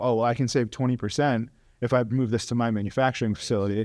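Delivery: ordinary delivery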